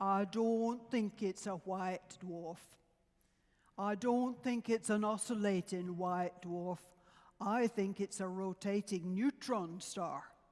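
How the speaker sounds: put-on speaking with Yorkshire accent. Retelling Fred's first response after Tony's presentation, in Fred's Yorkshire accent. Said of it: "in his Yorkshire accent".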